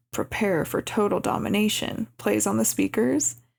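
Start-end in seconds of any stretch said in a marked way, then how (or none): none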